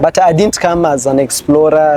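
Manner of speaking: ordinary delivery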